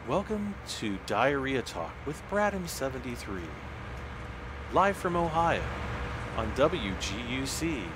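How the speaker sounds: public-radio announcer voice with swooping pitch. Opening a made-up radio show bit in an NPR radio voice. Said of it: "we have to do the radio voice. It's like the N P R radio voice".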